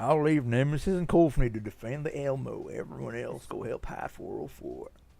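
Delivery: put-on western cowboy accent. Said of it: "why are you talking in a Western accent?".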